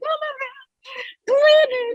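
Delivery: acted, very high, sobbing, weepy crying wail. Retelling her best friend's reaction in their scene after the car hit her: imitating a friend crying. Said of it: "she's all crying like".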